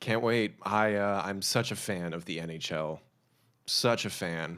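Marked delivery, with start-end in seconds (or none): 1.3-4.6 ironic, insincere enthusiasm, slow and dry. Claiming to be a big fan of the NHL, sarcastic. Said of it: "Insert sarcasm here".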